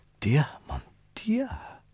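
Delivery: frightened moan, half-whispered, very high pitched. A woman reacts to Monsieur Pierre's remark about Napoleon, terrified moaning half-whisper. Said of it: "moaned Anna Pavlovna in a terrified whisper".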